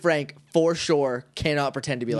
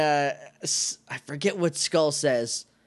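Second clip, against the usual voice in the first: ordinary talk, nothing marked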